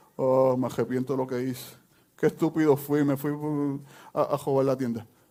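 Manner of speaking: weepy, tearful, regretful crying. Acting out a caught thief in jail: imitating someone crying. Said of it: "entonces estoy llorando".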